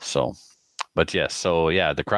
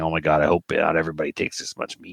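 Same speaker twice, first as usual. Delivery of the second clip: put-on panicked voice. Retelling how someone panicked seeing how much meat he took: imitating someone panicking. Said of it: "she was like panicking".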